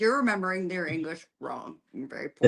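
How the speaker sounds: normal talking voice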